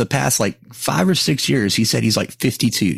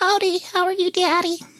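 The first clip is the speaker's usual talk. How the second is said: put-on very high-pitched, creepy little-kid voice. Just introduced by his neighbor, a guest greets him in a childlike voice. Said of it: "because you sound like a child".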